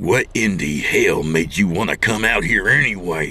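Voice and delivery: angry, irritated, growled, snarling. Don, in his truck with Maggie, asks her why they came, growling. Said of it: "Don growled".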